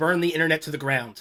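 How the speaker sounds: ordinary delivery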